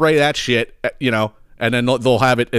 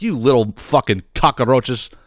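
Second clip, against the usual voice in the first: acted-out angry outburst. Retelling cursing at the roaches he saw: retelling being mad. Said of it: "I was so mad just seeing them all".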